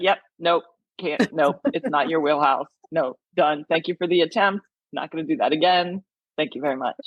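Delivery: ordinary delivery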